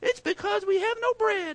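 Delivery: put-on very high little kid voice. Retelling what the listeners said to one another, in a little kid voice. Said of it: "That's my nat little kid voice".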